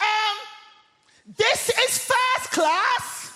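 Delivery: play-acted, very high, drawn-out top-of-the-voice shout. Retelling a woman in the first-class carriage shouting at them, imitating a woman shouting. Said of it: "at the top of her voice, she shouts".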